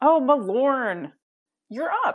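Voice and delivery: slow, high-pitched surprised tone.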